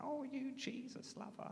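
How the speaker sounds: high, mocking, jeering tone.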